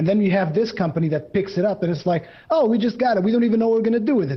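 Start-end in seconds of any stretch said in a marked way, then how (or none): 2.5-4.4 put-on Italian-American wiseguy accent, offhand. Acting out a company that just bought a game series: imitating an Italian-American mobster. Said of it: "you almost sounded like an American Italian mobster there".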